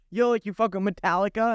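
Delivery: ordinary talk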